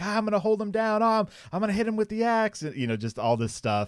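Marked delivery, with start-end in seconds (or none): 0.0-2.6 mock yelling, much higher and louder. Recounting a game session where everyone at the table shouts, retelling people yelling. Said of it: "everyone at the table is just yelling and screaming like".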